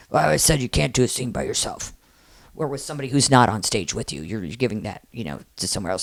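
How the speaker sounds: low, rumbly, grumbling complaining voice. Retelling how he reacted to the scene, the speaker imitates him grumbly. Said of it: "And he did like grumbly".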